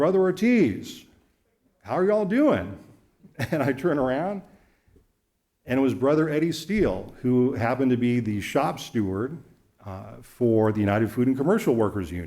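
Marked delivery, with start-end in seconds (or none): 0.0-2.8 loud, big, booming, swooping put-on call. Retelling a greeting from a car that pulled up behind you, do Eddie Steele's loud, booming voice. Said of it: "this loud, booming voice".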